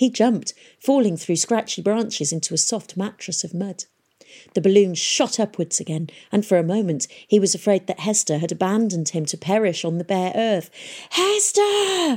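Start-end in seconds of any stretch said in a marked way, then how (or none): 11.1-12.2 shrill, full-throated, very high, throat-straining shout. After landing in mud, a man calls for a woman he fears left him: shouted so loud it hurt. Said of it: "he shouted, so loud it hurt his throat".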